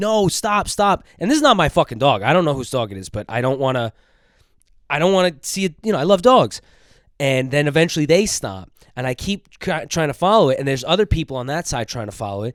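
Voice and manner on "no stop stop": acted-out, full-throated, high-pitched screaming. Retelling chasing a dog on the FDR drive: imitating own screaming. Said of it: "screaming, like".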